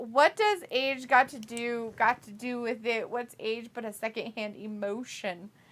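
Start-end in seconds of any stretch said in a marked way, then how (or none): none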